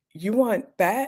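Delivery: high, condescending, patronizing, talking-down voice. Retelling how a doctor talks during a code, imitating his condescension. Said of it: "not in a helpful way but in a condescending way".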